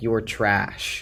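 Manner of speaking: normal talking voice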